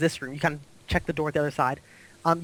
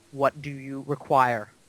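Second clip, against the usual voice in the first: dropped, low-register, deep voice; 3 semitones lower than usual. Voicing the creature as it speaks to the players, in a low voice. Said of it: "it speaks to you in a low voice".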